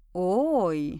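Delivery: very low, deep, taunting, drawn-out "Ой". Reading a character's exclamation as the narrator turns to him, mocking. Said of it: "с издевкой произнес Валерион".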